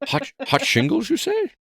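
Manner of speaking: put-on high-pitched Scottish accent, put on. Joining in on the movie's Russian captain: Sean Connery impression. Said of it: "he talks like that".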